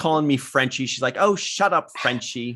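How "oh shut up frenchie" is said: put-on sassy, dismissive tone with attitude. Retelling what Marina said on set: imitating sassy Marina. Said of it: "she's very sassy".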